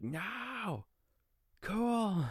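very high, loud, thrilled shriek, long drawn-out word. Recalling getting a video by text at work, retelling an excited scream. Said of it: "I was like screaming at the top of my lungs".

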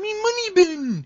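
very high, loud duck voice with Scottish accent. Asked if they have a Scrooge McDuck voice, the speaker tries it: Scrooge McDuck voice. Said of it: "you have a Scrooge McDuck voice?".

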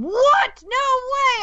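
mock very high, shrill, loud, disbelieving shriek. Retelling a reaction to a cast reveal video: retelling own scream at top of lungs.

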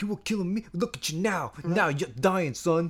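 put-on, street-tough Brooklyn tough-guy accent. Speaker mimics how he tried to deliver a line, in a Brooklyn tough-guy voice. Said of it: "He tried to be like Brooklyn tough guy".

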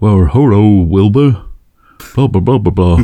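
very bad talking-horse voice. Describing an old show about a talking horse, bad Mr. Ed impression. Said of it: "that's a very bad impression of a talking horse".

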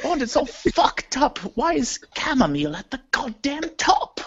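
awful, high voice with badly swooping pitch. Doing Judi Dench scolding Bond: Judi Dench impression. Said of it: "a really awful impression of Dame Judi Dench".

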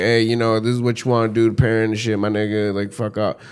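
ordinary delivery

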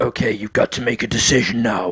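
put-on horror villain voice. Retelling a horror game's villain demanding a decision: Saw guy voice. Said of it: "in this voice. I am the Saw guy".

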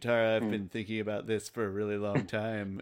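put-on flat, low character voice. Speaker imitating the actor playing Aang addressing Katara, flat monotone. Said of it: "it was really flat".

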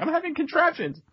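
very high-pitched yelling. Picturing someone standing there yelling: Beavis yelling. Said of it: "picturing Beavis standing there yelling".

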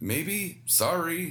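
high, hollow, half-hearted, insincere voice. After mocking a friend who listens to the show, sounding insincere. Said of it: "That didn't sound sincere".

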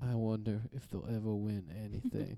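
barely audible, quiet, flat mumbled monotone. Quoting a roommate about a sad Vikings game: imitating Jacob's mumbling monotone. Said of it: "Does he talk like that?".

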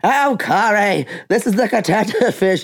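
sea-creature character voice. Retelling a joke made while watching the show: Catata Fish voice. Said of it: "I was speaking in the voice of the Catata Fish".

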